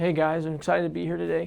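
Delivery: flat, soft, underwhelming low-energy delivery. Demonstrating the wrong way to deliver on camera, flat, low-energy delivery. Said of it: "but you deliver it like this".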